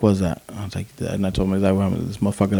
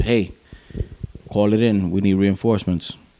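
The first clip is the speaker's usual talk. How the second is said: ordinary talk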